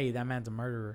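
hushed, secretive stage whisper. Retelling a remark to a girlfriend about a man seen in person: imitating own half-whisper. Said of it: "I whispered to my girlfriend".

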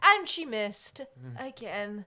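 very slow, loud, drawn-out disdainful narrator voice. Imitating the game's narrator describing a boss battle: imitating the narrator's disdainful voice. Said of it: "that the dis-, disdain in his voice".

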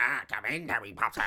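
hunched-over, creepy bartender character voice. Retelling a film scene, voicing the bartender made into Nosferatu. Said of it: "all hunched over, and he's like".

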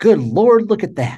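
put-on high, loud blurted outburst in an Oklahoma accent.

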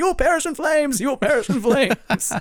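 sudden, high-pitched, acted-out yelling. Acting out a man who ran up to someone, retelling a yell. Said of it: "starts yelling at him".

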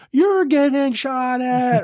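high-pitched shouted yelling. Under fire, retelling how another man screamed at him: retelling a scream. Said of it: "He's screaming at me".

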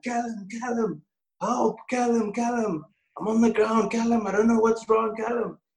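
put-on scream. Retelling lying on the floor unable to move, retelling screaming for help. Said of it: "So I start screaming".

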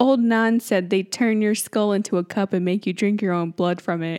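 ordinary talk, nothing marked

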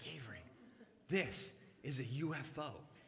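theatrical, weighty, slow, dramatic pronouncement. Retelling telling a daughter about lights in the sky: imitating a dramatic announcement. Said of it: "I'm a little prone to the dramatic".

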